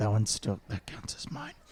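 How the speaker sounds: whispering under breath. A player's character claims the kill, whispering under breath. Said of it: "I whisper under my breath".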